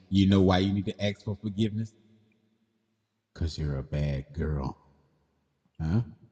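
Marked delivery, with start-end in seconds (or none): 3.3-4.8 eerie, creepy, unsettling voice. Answering another speaker in a back-and-forth, creepy tone. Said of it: "Why that sounds so creepy when you say it?".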